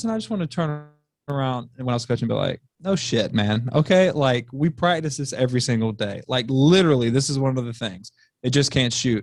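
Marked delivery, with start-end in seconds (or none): none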